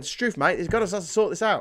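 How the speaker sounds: clumsy put-on Australian accent. Voicing what Australians said after seeing Grenfell, bad Australian accent. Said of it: "I'll never do an Australian accent again".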